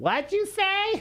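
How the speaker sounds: put-on very high-pitched little old grandma voice. Host recalling a player who could not hear, doing a grandma impression. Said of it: "That was a good grandma impression".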